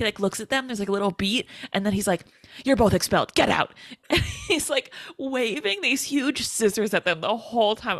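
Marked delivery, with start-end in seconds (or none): 2.6-3.7 rapid-fire line, said very fast. Recounting a funny scene with a man in his office: retelling a very fast line. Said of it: "he just says it so fucking fast".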